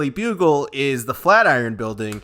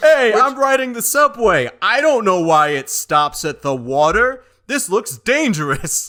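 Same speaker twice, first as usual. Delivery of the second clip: put-on New York accent, pitched high; 8 semitones higher, 3 dB louder than usual. Describing how New Yorkers talk in a movie, doing a put-on New York accent. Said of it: "I'm from somewhere in New York".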